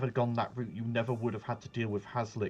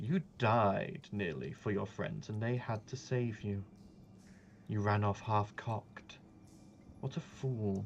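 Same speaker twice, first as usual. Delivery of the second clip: put-on woman's voice, quieter; 5 dB quieter than usual. Voicing the lady in green speaking to a rescued player: voicing the lady in green. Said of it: "You hear the voice of".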